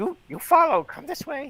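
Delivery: high-pitched, loud squealing voice. Voicing a figure who leads the group up the path, World of Warcraft goblin voice. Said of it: "World of Warcraft uh, goblin".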